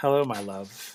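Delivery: soft, feminine, otherworldly spirit voice. Voicing a spirit speaking through an entranced fortune teller: soft, feminine spirit voice. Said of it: "This voice is softer".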